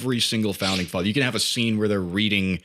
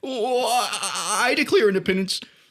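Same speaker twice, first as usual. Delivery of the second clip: stuttering, halting voice, very high-pitched; 12 semitones higher than usual. Acting out a stuttering founding father declaring independence: stuttering Morty voice. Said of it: "He's stuttering all the time".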